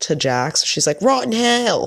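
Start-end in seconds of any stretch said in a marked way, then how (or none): 1.0-1.9 put-on Southern accent, pitched very high. Imitating a reality TV cast member's catchphrase: Brittany's Southern accent impression. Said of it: "I was trying to imitate her".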